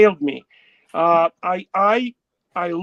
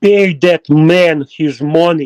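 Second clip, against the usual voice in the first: slow, loud Russian mobster voice; 4 semitones lower, 6 dB louder than usual. Saying a catchphrase a viewer asked for: Russian mafia way of talking. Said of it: "making me talk in a Russian mafia way".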